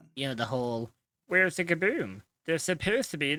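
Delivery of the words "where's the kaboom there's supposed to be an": high, pitched-up cartoon alien voice. Talking about how voice acting started, doing a Marvin the Martian voice. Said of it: "you sound just like him".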